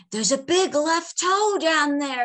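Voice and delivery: high-pitched yell. Narrator reads a character who has forced open a cat's jaws, yelling. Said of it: "he yelled".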